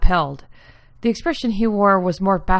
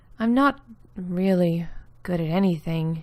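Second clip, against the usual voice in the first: low mumble, slower; 4 dB quieter than usual. Narrator reads Julia's reply in a conversation, mumbling low. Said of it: "Corsair Clockworks is the serialized story of [name] Corsair, and how the daughter of a clockmaker becomes tangled in the war between her Garlish homeland and the far off nation of Suzdal Nurgovod. /".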